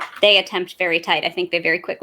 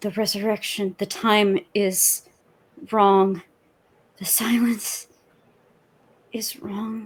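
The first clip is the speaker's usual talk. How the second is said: hushed whisper, faster pace; 3 semitones higher than usual. A character whispers to allies as weapons are destroyed nearby: whispering. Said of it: "I'm whispering into my allies".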